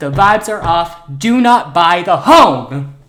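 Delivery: booming, full-on loud yell, "home" drawn out. A podcast host gives listeners a lesson about haunted houses, yelling. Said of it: "I didn't mean to yell that".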